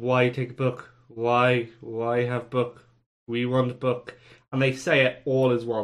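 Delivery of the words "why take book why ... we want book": buzzing insect voice, words buzzed like a fly. Voicing the Greyflies as they buzz at a player: buzzing Greyflies voice. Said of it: "they continue to buzz at you and say".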